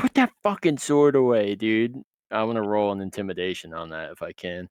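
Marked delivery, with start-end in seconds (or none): 0.0-2.0 raised, pitched-up voice, just short of a yell. Playing a character in a tabletop game, walking over wanting to intimidate; raised voice, not yelling. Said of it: "but like I want to raise my voice".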